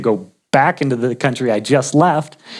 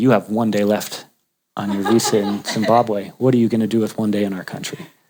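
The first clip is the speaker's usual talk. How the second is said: mock deadpan voice, much lower in pitch; 4 semitones lower, 3 dB quieter than usual. Retelling a border crossing, the speaker quotes the guard, imitating his deadpan. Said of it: "And deadpan".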